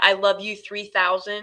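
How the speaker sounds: ordinary talk, nothing marked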